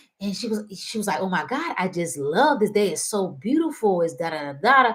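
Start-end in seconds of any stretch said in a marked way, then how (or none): 1.2-4.0 mock awestruck, delighted, excited gushing. Retelling a woman's delight at pink trees while driving: imitating someone excited and in awe. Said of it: "she was just so excited and in, in, in awe of them".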